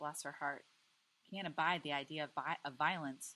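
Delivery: plain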